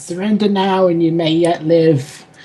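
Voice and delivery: high-pitched calling out. A player's character calls on foes to surrender mid-fight, shouting over the combat. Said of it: "try and shout over the combat".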